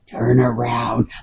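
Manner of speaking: eerie, chilling ghostly voice, as if recorded. Retelling a recording caught on video, reenacting a chilling ghost voice. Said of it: "I'm trying to do, like, the, the, uh, reenactment of it".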